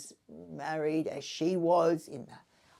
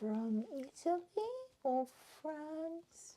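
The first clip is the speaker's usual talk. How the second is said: hushed, lofty, snooty, sing-song pretentious airs; 11 semitones higher, 9 dB quieter than usual. Listing where her rosary beads came from, mock-pretentious tone. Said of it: "What are you mocking here?".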